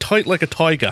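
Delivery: high-pitched, badly faked Dutch accent. Describing how the show sounds now, in an attempted Goldmember Dutch accent. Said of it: "was that your Australian accent?".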